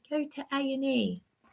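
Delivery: slow, soft half-whisper, drawn out. Retelling Darren's reply to the call for help: imitating Darren half-whispering. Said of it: "he was whispering".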